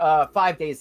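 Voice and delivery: ordinary delivery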